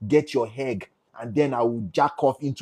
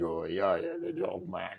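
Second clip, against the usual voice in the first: deep, very low, hushed, soft, heavy movie voice; 8 semitones lower, 10 dB quieter than usual. Show how a content creator you admire speaks, imitating someone who talks like a movie. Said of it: "he talks like a movie".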